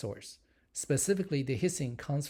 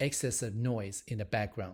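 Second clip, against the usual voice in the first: usual speaking voice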